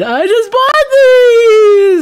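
wailing voice, high and loud.

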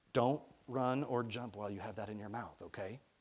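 plain

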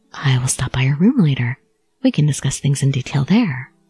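hushed whisper. A man leans in close to tell the narrator this: whispering. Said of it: "he leaned in and whispered".

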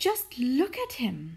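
proud, pleased tone, showing off. Mrs. Silver shows Mr. Hoppy the tortoise on the balcony, proud. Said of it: "Mrs. Silver said proudly".

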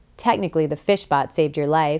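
ordinary delivery

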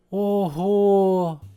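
sighing. Narrator reads a little bunny after reading a road sign: sighing. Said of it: "зітхнув зайчик".

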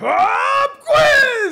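shrill, very loud, high-pitched yell. Retelling springing a surprise test on the class: retelling own yell. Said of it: "And then I yelled out".

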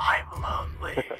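put-on whisper. Joking that Santa whispers something: Santa whispering. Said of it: "Santa whispers".

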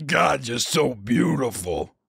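wild, slow, drawn-out drawl. Retelling an interview, quoting the actor flirting: wild Vin Diesel voice. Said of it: "His voice is so wild".

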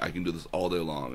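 ordinary talk, nothing marked

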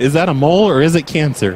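ordinary talk, nothing marked

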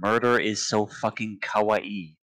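ordinary talk

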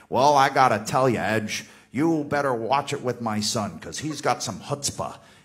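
put-on stagey, old-timey 1950s movie voice. Retelling what John's dad said about his son, in an old-timey 1950s movie voice. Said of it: "kind of goes with this old-timey".

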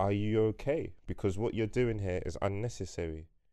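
plain

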